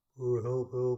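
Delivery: very loud, high, mocking demon voice. Retelling a dream, the speaker imitates a demon's mocking voice. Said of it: "doing that in a demonic, demonic voice".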